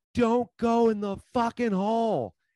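shrill, very high, drawn-out full-lung scream. Retelling what they screamed while squatted down on a hill: retelling a top-of-lungs scream. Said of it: "I scream at the top of my lungs?".

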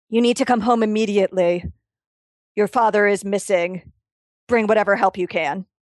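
distinct, very clearly spoken voice. Game master voicing a creature that speaks to a player in their aunt's voice. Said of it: "in your aunt's voice very clearly says".

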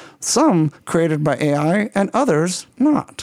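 robotic, synthesized-sounding voice speaking French.

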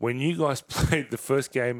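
talking through laughter. Asking about the first game against Parra, laughing while talking. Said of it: "sorry, I'm laughing".

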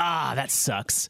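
let-down, bummed-out grumble, meant to be heard. Retelling a remark about dust in the hall: imitating saying it real loud. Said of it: "I said real loud".

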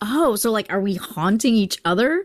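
ordinary talk

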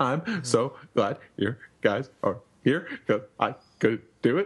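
acted sobbing, weepy, tearful voice. Retelling a scene in which Chopper speaks to his rescuers: imitating Chopper crying. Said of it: "'cause he's crying".

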